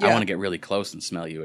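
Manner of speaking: put-on sultry, sensual, seductive tone. Retelling a commercial woman's line: imitating a sensual voice. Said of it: "trying to do it all sensual-like".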